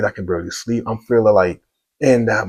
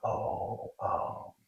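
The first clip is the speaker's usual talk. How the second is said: very soft, breathy, hesitant hushed whisper; 17 dB quieter than usual. Retelling a phone call, quoting his wife's answer: imitating someone whispering. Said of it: "Why are you whispering?".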